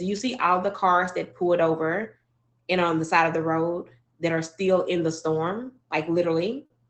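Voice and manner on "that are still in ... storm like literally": normal talking voice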